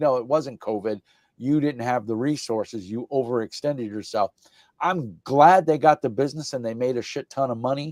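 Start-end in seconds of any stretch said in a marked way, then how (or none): none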